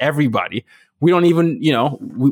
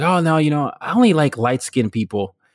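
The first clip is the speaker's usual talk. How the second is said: plain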